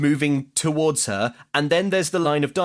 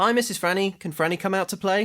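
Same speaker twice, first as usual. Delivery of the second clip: put-on voice like a little kid; 4 semitones higher than usual. Role-playing as Franny's friend, the adult speaker talks like a child. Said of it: "I was talking like a child".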